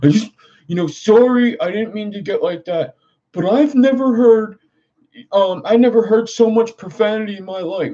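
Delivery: very high, acted, nervous, cracking, pleading voice. Retelling what a nervous man said to him: imitating a nervous cracking voice. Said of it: "his voice was cracking".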